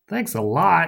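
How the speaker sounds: growling. Narrator to Johnny after crashing into a bakery's glass door; growled. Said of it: "I growled at Johnny".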